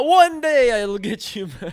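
put-on Transylvanian-sounding accent. Repeating a joke line about the stolen gold toilet: Transylvanian-sounding accent. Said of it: "that sounded like Transylvania".

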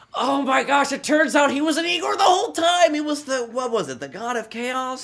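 mock shocked gasp, high pitched.

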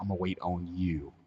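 heavy emphasis on the word "you". Retelling his reply to her asking if he'll wait: stress on you. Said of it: "Emphasis on the word you".

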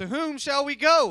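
play-acted, very loud, slow, drawn-out sarcastic tone. Acting out someone's reply in a retold story: retelling a sarcastic question. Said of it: "And like sarcastically asking the question".

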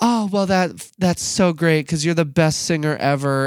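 high-pitched, effusive, doting, gushing voice. Imitating a mom's reply when her child says they feel called to lead worship. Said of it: "that's a spot on impression".

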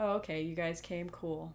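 mock-nonchalant voice. Recounting how he reacts on seeing them arrive, imitating someone playing it cool. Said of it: "he immediately erased it off of his face and was like".

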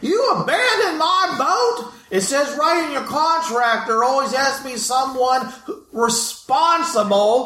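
yelling in character voice. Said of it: "starts screaming and kicking and yelling".

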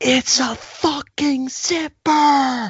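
very high, slow, drawn-out yell. Speaker retelling what they shouted through the car window at another driver: retelling a road-rage yell. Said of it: "That's what I'm yelling".

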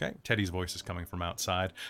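plain reading voice

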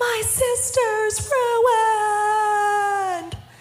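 put-on very high, slow, sing-song little boy yell. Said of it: "begins to yell out".

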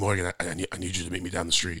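put-on Thai-accented English. Retelling a friend's phone call, imitating Hart's voice. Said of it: "so this is kinda the way he sounds".

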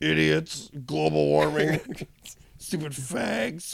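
put-on villain voice. Improvising as a talking fan villain in a made-up movie: talking fan villain voice. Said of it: "You're the voice of the fan Kano".

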